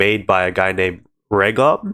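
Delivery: ordinary talk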